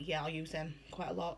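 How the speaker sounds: ordinary delivery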